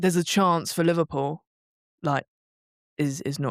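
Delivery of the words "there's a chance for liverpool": ordinary talk, nothing marked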